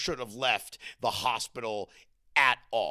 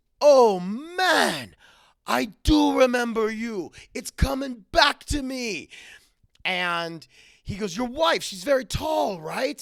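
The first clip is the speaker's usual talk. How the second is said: put-on Caribbean accent, higher and louder; 11 semitones higher, 6 dB louder than usual. Retelling what a tech said on remembering him: Caribbean accent. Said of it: "I'm gonna do a little bit of an accent".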